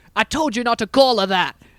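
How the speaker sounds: put-on wavering British-East Coast accent. Quoting an actor's line to mock his wavering accent: imitating an actor's wavering accent. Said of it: "There's a moment where he goes".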